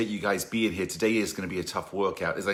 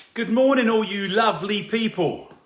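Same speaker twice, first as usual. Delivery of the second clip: very high, loud, showy put-on English accent; 13 semitones higher, 5 dB louder than usual. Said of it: "That's me with my English accent".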